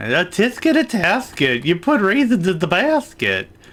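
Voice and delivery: exaggerated cartoon voice, thick lisp on s, swooping. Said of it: "heavy lisp".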